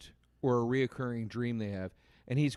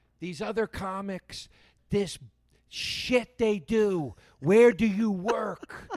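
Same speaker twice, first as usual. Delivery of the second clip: put-on screaming comic voice, higher and louder; 8 semitones higher, 6 dB louder than usual. Retelling a comic's opening to the audience: imitating Eddie Pepitone screaming. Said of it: "he starts screaming at the audience".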